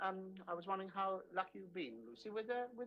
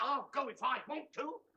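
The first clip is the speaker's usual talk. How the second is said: upset, irritated, higher pitch and louder; 6 semitones higher, 6 dB louder than usual. Answering an offer not to go for a walk: upset. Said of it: "Thought you weren't gonna get upset".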